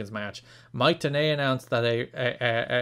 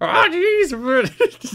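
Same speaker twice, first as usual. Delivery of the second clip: put-on cartoon teen voice, higher and louder; 8 dB louder than usual. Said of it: "[name] as Morty".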